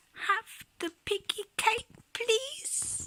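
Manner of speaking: put-on teeny tiny voice, very high and soft. Reading a story, Ruby answers Mum after being naughty, in Ruby's teeny tiny voice. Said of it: "said in a teeny tiny voice".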